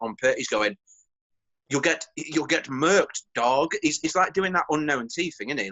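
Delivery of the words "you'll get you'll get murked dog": slow, very posh put-on accent, laid on thick. Quoting a man using slang words in a very posh accent. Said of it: "using certain slang words in a very posh accent".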